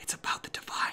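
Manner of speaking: hushed whisper. Voicing a stranger leaning close at a bar: whispering. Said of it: "leans in again".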